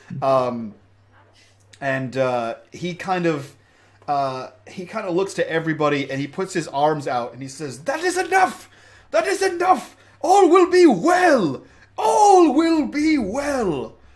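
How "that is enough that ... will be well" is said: very high-pitched, loud, angry shouting voice. Retelling a story, the speaker quotes the burgomaster addressing everybody: retelling an angry burgomaster. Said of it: "he's getting angrier and angrier".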